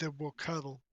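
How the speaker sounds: hushed, quiet, straight-faced, dead-serious deadpan. Telling a story, the speaker voices Morgan looking him in the face, deadpan serious. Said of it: "Morgan deadpan serious looks him straight in the face and he goes".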